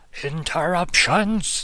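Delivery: high-pitched, fed-up, angry yell. Voicing an enemy behind the target who gets angry: character shouting angrily. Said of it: "the guy behind him just shout".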